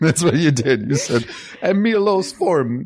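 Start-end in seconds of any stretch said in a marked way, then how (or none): 1.6-2.8 put-on Czech accent, higher and slower. Quoting back what the other speaker said earlier, in a czech accent. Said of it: "your Czech accent".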